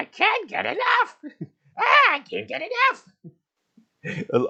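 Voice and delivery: very high, squeaky, swooping cartoon voice, very drawn out. Gamer voicing a character enjoying flowers too much, Toad voice from Super Mario. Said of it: "that's my Toad voice from Super Mario".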